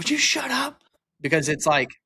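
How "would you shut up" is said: play-acted very high, sudden snapped outburst. Retelling snapping at his wife in the cold plunge: imitating snapping at someone. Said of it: "And I just snapped".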